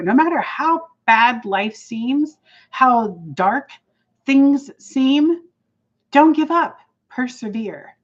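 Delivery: a little teary-eyed, earnest, urging tone. Speaker addressing listeners after recalling someone upset by a blog, teary-eyed. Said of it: "You're a little teary eyed".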